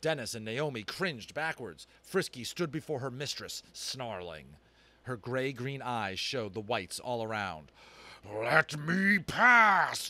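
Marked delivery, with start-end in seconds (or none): 8.2-10.1 very loud, high, bellowing roar. Narrator voicing Flag demanding to be let past, roaring. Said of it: "Flag roared".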